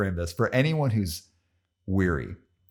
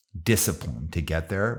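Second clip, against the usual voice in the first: normal talking voice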